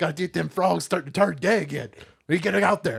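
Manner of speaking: ranting radio talk-show host voice. Doing a character called Alec Phones on a podcast: Alex Jones impression. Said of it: "Alec Phones is the perfect combination of Alex Jones".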